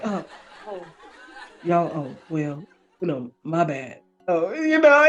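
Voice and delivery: stammering, halting speech. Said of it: "he's stuttering and stuff".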